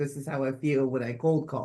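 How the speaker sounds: usual speaking voice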